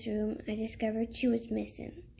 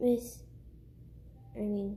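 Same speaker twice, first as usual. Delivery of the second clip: ordinary delivery, nothing marked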